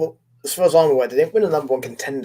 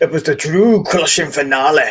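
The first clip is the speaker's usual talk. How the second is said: terrible put-on Scottish accent, raised pitch; 6 dB louder than usual. Joking about a wrestling match finish: terrible put-on scottish accent. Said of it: "the accent is terrible".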